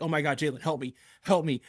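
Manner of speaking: desperate, upset, pleading cry. Retelling how a girl screamed at him over a video game, imitating a scream for help. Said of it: "she's screaming at me and she's like".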